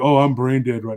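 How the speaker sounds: put-on robotic, mechanical, rote-sounding delivery. Imitating a brother's favorite stock excuse: imitating a robotic rote response. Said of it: "like a trained robot monkey response".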